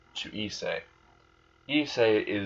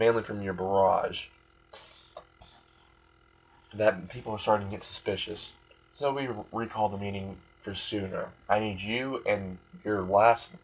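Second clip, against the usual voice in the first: ordinary delivery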